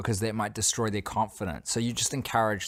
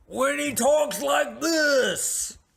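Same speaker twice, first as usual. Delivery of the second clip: very high, loud, drawn-out yell; 4 dB louder than usual. Showing what the yell sounds like: Adam Sandler yell. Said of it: "that's what the Adam Sandler yell sounds like".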